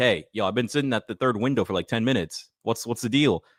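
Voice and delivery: ordinary talk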